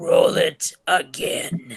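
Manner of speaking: low, rough voice, letting it creak. Retelling a convention moment, quoting the actor's line in Darth Sidious voice. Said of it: "and in his Darth Sidious voice".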